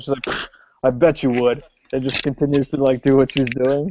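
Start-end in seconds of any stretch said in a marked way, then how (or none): 0.2-1.6 dismissive scoff in an offbeat voice. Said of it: "scoffs at him".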